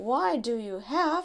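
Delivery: ordinary delivery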